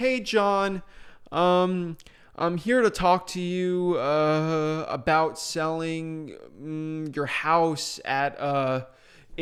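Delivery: very slow, halting, stumbling over ums and uhs. Showing how talking to a seller sounds with filler words: hesitant, full of filler words. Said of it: "it doesn't sound good at all".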